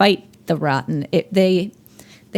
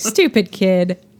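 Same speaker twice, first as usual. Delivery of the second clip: ordinary talk, nothing marked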